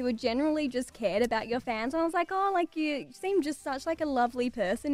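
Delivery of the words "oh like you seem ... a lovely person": ordinary delivery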